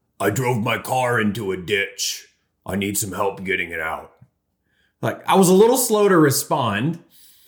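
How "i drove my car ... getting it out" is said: very low, deep, gravelly smoker's rasp. Retelling a friend at the door in the middle of the night, deep, gravelly voice. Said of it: "he had this kind of deep, gravelly voice".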